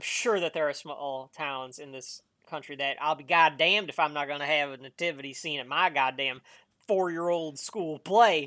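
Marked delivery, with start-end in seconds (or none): 3.0-8.5 put-on Southern US accent. Voicing a small-town mentality about a school nativity play: Southern accent. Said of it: "I did a Southern accent for that".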